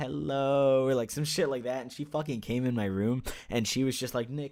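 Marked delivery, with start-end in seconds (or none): 0.0-0.9 lazy, zoned-out, slow, drawn-out stoned-sounding drawl. Yelling from his room as she came home, mock-stoned hello. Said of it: "in like a really stoned voice".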